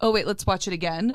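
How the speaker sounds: ordinary delivery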